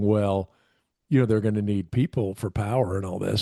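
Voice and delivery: ordinary talk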